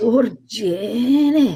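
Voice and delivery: put-on her own accent, with a name stretched out. Retelling how a friend says a name: imitating the other speaker's accent. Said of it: "She does your accent very well".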